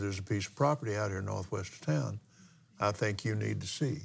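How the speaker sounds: ordinary delivery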